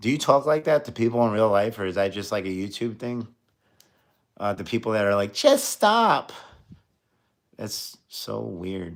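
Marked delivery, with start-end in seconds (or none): 5.3-6.3 very high, mocking baby-talk voice. Mocking people who say the phrase: mocking babyish voice. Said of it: "That sounds so babyish".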